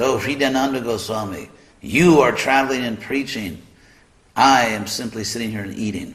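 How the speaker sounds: put-on theatrical, jovial, grand, dramatic tone. Retelling what Prabhupada said after breakfast: imitating Prabhupada's mock dramatic tone. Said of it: "with this, uh, mock, I don't know, this dramatic tone".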